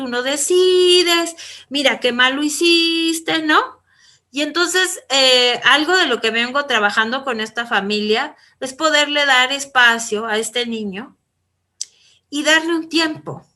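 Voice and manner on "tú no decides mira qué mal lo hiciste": mock, high-pitched, toned-down half-yell. Retelling how a father yells at his son: imitating the father yelling. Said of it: "el papá empieza a gritar y le dice".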